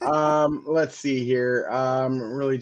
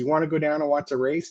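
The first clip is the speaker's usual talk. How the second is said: put-on Mexican accent, faster pace; 3 semitones higher than usual. Telling how his wife Sandra invited him to a race, Sandra's cute Mexican accent. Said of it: "in her cute little Mexican accent".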